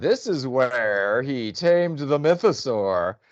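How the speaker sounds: reading aloud with obvious sarcastic disbelief. Retelling how she reads the plaque to him, mimicking a sarcastic reading. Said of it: "she reads it sarcastically".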